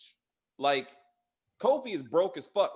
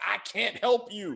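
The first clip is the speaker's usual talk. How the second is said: slow, drawn-out, mild yell; 4 semitones higher than usual. Retelling a show character screaming at a woman: imitating someone screaming. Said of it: "him screaming at the woman".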